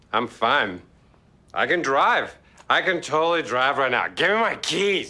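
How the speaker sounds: badly faked drunkenness. Pretending to be drunk while demanding the car keys: bad fake drunk acting. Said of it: "one of the worst drunk acting performances ever".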